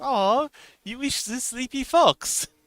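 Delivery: put-on thick German accent laid on, slow and high. Retelling what the girl he was dating said, leaning on him, in a thick German accent. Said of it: "with a like thick German accent".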